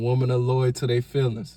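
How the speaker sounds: usual speaking voice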